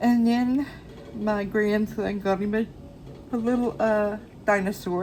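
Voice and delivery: words pulled apart by a loud yawn. Grandparent telling about a shopping trip for their grandson: talking through a yawn. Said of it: "Excuse me for yawning".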